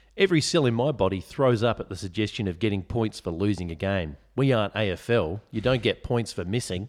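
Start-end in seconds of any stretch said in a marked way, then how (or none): none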